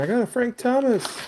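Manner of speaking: put-on high, excited, thrilled child's shouting. Remembering being ten and running home from Toys R Us, retelling a childhood scream. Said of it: "running home and screaming".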